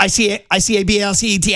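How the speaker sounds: put-on very fast spelling. Retelling how a spelling contest winner spelled words: imitating very fast spelling. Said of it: "he says them so fast".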